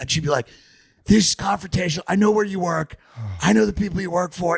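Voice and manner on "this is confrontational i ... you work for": raspy, guttural voice, pitched up. Retelling how a woman answered questions: raspy, guttural voice. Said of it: "she had this like raspy, guttural voice".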